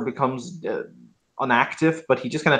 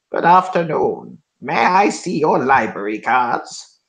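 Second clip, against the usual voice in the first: very grinding, grindy stone-creature voice. A game master voicing a tiny crystal golem greeting the players, in a very grindy voice. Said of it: "in a very grindy voice".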